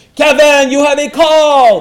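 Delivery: very high, loud yell from far away.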